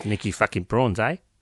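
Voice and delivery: put-on South African accent. Speaker introducing a south african murder case, south african accent. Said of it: "It's a South African accent".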